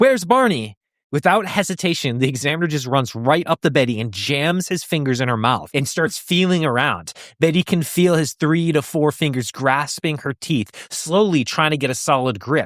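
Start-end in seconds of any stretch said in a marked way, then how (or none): 0.0-0.8 put-on, high-pitched shout. Retelling an abduction story, a woman calling for her husband: imitating someone shouting. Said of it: "so she shouts".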